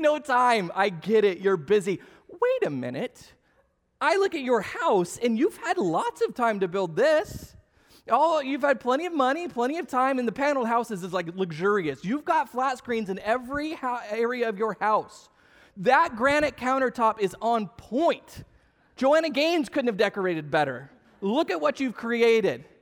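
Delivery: mocking snarky voice.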